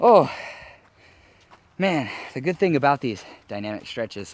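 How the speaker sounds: winded, breathing hard. Doing dynamic stretches as a warm-up; out of breath. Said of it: "I'm out of breath".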